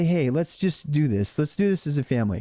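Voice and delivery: ordinary delivery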